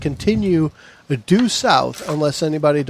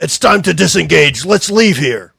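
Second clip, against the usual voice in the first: loud, gruff, rough call, sounding distant; 6 dB louder than usual. Narrator voicing someone at the back of the ship, loud, gruff voice. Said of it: "a loud, gruff voice that says".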